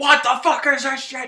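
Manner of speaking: shrill, very loud, sergeant-style screaming. Retelling a sergeant screaming at everyone up the stairs, imitating a sergeant screaming. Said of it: "And he's screaming".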